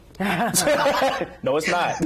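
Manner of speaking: high, laughing, mock manner.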